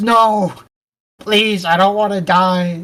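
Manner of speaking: mock scream, drawn-out, slow and stretched long. Retelling a game scene where a character screams when unplugged: imitating a scream. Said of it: "she screams".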